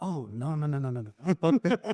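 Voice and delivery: put-on French accent. Retelling how he kept saying no, in a put-on French accent. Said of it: "he's got the freaking French accent".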